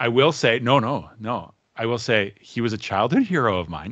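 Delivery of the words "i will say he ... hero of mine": starstruck voice, cracking mid-line. Talking about working on a cartoon with a childhood hero, voice cracking. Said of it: "As my voice cracked".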